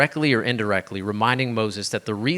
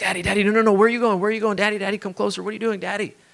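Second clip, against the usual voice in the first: put-on very high, rushed, frantic little-boy panic; 10 semitones higher, 3 dB louder than usual. Retelling a child in the pool as his dad steps back: imitating Rio panicking. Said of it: "Rio started to panic".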